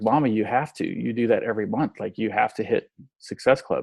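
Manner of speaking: bawling, tearful, sobbing voice. Retelling the oldest daughter's plea to her mother: imitating a crying daughter. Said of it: "just started bawling".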